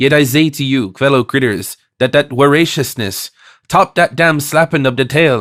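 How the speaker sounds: ordinary delivery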